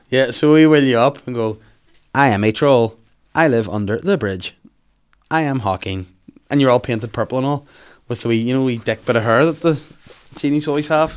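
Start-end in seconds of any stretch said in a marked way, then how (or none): 2.1-6.0 robotic computer voice. Pitching a bit to the other speaker, do the Hawking computer voice. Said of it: "but I do his voice".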